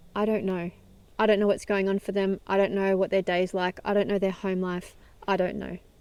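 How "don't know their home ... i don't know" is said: ordinary talk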